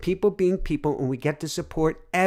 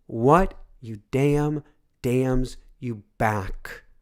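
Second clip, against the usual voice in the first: slow, deliberate, carefully spaced-out delivery; 3 semitones lower than usual. A speaker repeats a spiritual teacher's saying to listeners, said more slowly. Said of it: "I'm going to say that more slowly".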